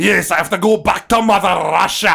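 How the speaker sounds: put-on very loud Scottish accent. Recapping a movie, quoting a character's line, retelling in a scottish accent. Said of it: "He speaks with a Scottish accent".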